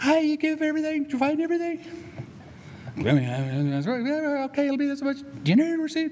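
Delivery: very high-pitched voice with okay stretched out. Retelling being served by a masked store clerk: high-pitched clerk voice. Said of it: "high-pitched voice".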